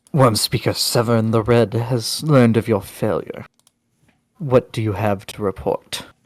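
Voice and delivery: rough, raspy, rasping character voice. Game master voicing a character questioning the players; raspy voice. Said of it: "pretty raspy voice".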